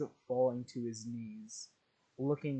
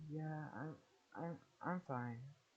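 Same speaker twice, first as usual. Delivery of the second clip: delirious, dazed, stammering delivery; 4 semitones higher, 10 dB quieter than usual. Retelling how Ochako answers after being caught: delirious Ochako voice. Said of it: "in a delirious tone".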